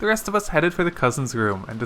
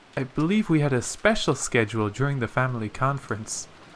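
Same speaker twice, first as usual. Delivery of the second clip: usual speaking voice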